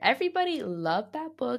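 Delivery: voice briefly cutting out mid-line. Speaker discussing a book everybody loved, voice cutting out for a second. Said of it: "my voice disappeared for a second".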